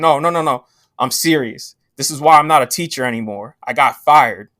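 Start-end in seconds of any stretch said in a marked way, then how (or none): none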